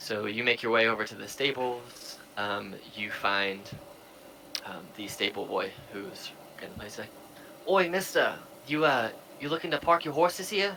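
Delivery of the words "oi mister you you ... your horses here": put-on loud, high-pitched street-kid New Jersey accent. Voicing a stable boy greeting a traveler: new jersey accent. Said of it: "Sounds like this kid's from Jersey".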